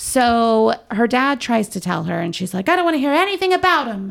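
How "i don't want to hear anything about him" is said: put-on quick, high-pitched mid-Atlantic accent. Recapping a story where a daughter refuses to hear her dad out, mid-atlantic accent. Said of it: "In her mid-Atlantic accent".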